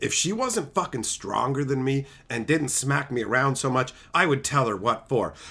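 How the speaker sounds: deep, very low, soft mumble under the breath. Acting out what someone mutters while folding socks: imitating Spurl muttering. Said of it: "He's probably fucking muttering".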